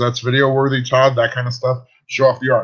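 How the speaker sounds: usual speaking voice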